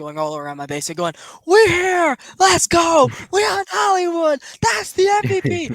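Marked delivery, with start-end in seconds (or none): 1.4-5.7 very high, very loud, drawn-out cheering scream. Speaker retells running around the room after a big hit, retelling own screaming. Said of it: "I was screaming around this entire room".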